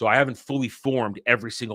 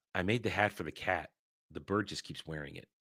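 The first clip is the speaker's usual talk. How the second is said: very quiet, hushed, dry, flat deadpan; 3 semitones lower, 11 dB quieter than usual. Recapping a movie scene, quoting the band leader's answer to Rumi, retelling a deadpan line. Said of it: "deadpan way".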